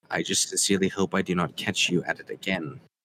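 menacing, private, close whisper. Dropping another man's hand, speaking so only he can hear: whispering. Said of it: "I just whisper him so only he can hear".

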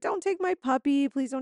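put-on high, sobbing, tearful bawling plea. Retelling a woman's plea as they take her dog; imitating her bawling. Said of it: "She starts bawling".

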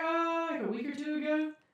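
high-pitched put-on voice. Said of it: "she's like".

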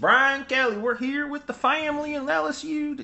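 put-on Southern accent, pitched very high. Mocking a coach who isn't a Southern guy: Brian Kelly fake Southern accent. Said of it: "Fake fucking Southern accent".

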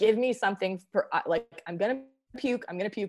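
frantic, desperate, pleading, begging tone. Retelling asking for help while about to vomit: retelling own begging. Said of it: "and I was begging".

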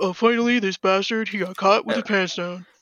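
mad, worked-up, angry ranting voice. Retelling how a man reacted to someone getting caught, imitating a mad guy. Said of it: "I'm trying to do a critical impression".

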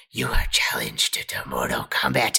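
tense, intense, breathy whisper. Retelling how a movie character talks: imitating Raiden's intense whisper. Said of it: "whisper talking".

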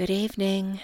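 tired, drained, weary, worn-out voice. After an emotional day, greeting Hendrik in bed, sounding tired. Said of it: "You sound tired".

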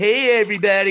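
high, open voice. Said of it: "You know how [name] will be".

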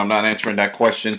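ordinary talk

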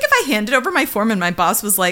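ordinary talk, nothing marked

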